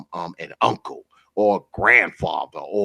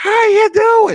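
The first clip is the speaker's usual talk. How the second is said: put-on very high, loud twelve-year-old girl voice; 8 dB louder than usual. Retelling how a huge store worker greeted his wife: imitating a man sounding like a twelve-year-old girl. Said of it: "he sounded like a twelve-year-old girl".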